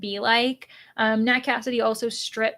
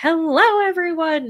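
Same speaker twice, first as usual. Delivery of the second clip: put-on loud, over-the-top crazy excitement, pitched up; 6 semitones higher, 5 dB louder than usual. Describing greeting everyone back from a sprint, the speaker retells an over-the-top greeting. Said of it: "And instead I'm like".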